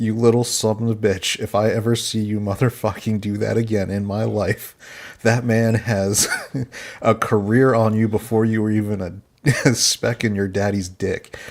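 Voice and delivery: plain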